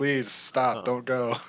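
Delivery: deadpan, unurgent delivery. Mocking a plea said without urgency: Gene Wilder Willy Wonka voice. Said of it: "Like the Gene Wilder and freaking Willy Wonka".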